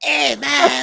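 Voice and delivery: put-on shrill, loud, high cartoon character voice. Quoting a cartoon character: Eric Cartman voice. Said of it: "not the Eric Cartman".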